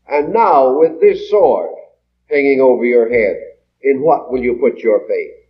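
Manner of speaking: ordinary talk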